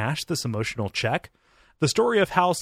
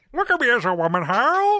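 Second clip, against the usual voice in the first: put-on very high, old-fashioned parrot voice; 12 semitones higher, 4 dB louder than usual. Voicing a parrot talking to Hal: old-timey parrot voice. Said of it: "both of our parrot voices are like old-timey".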